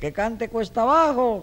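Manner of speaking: high-pitched, slow, mock yell.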